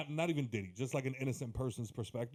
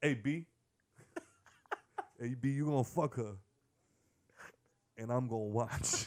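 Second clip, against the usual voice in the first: heavy put-on Harlem accent.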